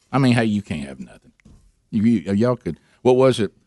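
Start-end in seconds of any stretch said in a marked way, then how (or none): 0.3-1.3 contemptuous, disdainful fatherly scolding tone. Retelling what dads said when kids broke their tools: imitating a dad's disdain. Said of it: "they would say it with the most disdain".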